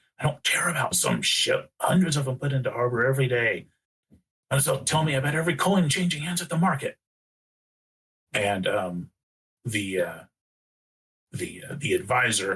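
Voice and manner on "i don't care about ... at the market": quick, pitched-up, angry hissed delivery. The syndic answers an advisor whispering to him, angry hiss. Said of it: "kind of angrily hiss".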